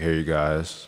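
deep, soft, bottom-of-the-range bass voice. Explaining EQ ranges with voice examples, showing the bass talker, in a bass talker voice. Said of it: "the bass talker who's like".

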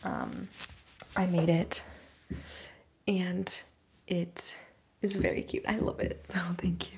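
whispering.

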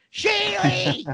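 put-on play-acted, very high, shrill drunken yelling holler. Retelling how a neighbor yelled from the roof: imitating Doug yelling. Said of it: "You're yelling in the whole fucking".

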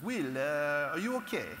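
concerned tone in a thick Italian accent.

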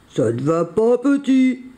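big, heavy, deep voice. Narrator reading the bison leaning toward Jean-Claude and speaking: big voice. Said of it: "dit-il de sa grosse voix".

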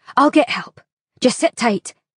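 voice growing firmer. Narrator reading a female voice speaking to a surprised woman, toughening up. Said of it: "toughening up".

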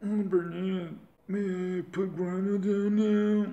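put-on robotic voice. In a voiced play scene, speaking to Bernice, in an Ajax character voice. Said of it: "my Ajax voice is just like vanilla Cyrax".

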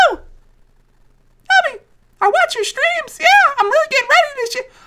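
put-on very high, rushed, childish kid voice. Recalling first meeting Salty at a tournament, speaker is imitating Salty's kid voice. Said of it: "That's how his voice was".

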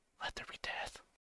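very quiet, breathy whisper, intimately close. Leaning over another character's head in a tomb: whisper. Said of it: "I lean over Nat's head and I whisper".

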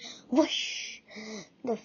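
ordinary delivery

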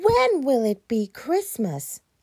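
very high moan. Narrator reading Ted's question to Big Bear, moaning. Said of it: "Moaned Ted".

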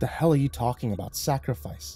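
ordinary delivery, nothing marked

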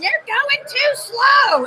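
very high, shrill shout. Retelling what a man in the class yelled: imitating Seth yelling. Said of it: "he's yelling".

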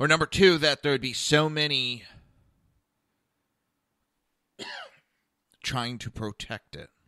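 stammering, stuttering, halting, stumbling speech. Speaking to the camera while admitting to stammering and stuttering. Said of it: "I'm stammering and stuttering all over the place".

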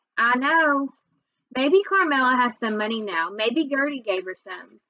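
plain

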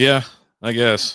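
beaten-down, dispirited, defeated, glum delivery. Podcast co-host answers how he is doing, sounding defeated. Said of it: "you sound defeated".

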